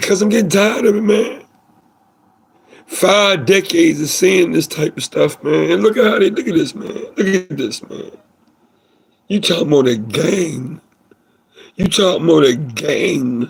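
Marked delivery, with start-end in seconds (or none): 0.0-6.9 choked-up voice catching with feeling. Reacting after a question about the defendant, choked up. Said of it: "I'm getting a little choked up".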